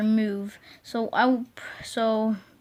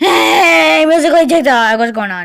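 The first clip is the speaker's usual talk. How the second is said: very loud, high, raspy belting voice; 6 semitones higher, 14 dB louder than usual. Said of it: "Kinda like [name]".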